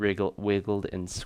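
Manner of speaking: plain reading voice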